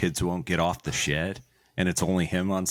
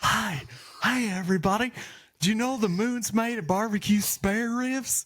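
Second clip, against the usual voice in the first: put-on very high, old-time ballpark announcer voice. Speaker reminiscing about a baseball announcer, doing a Harry Caray impression. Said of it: "the Will Ferrell impersonation of him".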